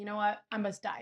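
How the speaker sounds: ordinary delivery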